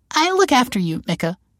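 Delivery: very high-pitched cooing. Narrator reads a character's line during a bear hug, cooing. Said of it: "she cooed".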